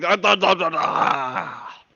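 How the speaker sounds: loud, high bear growl in Russian accent.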